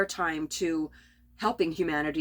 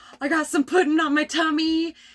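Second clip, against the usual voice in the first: high-pitched, loud, playful mocking tone. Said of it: "and I was just like".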